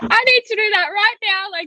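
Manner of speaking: excited exclamation.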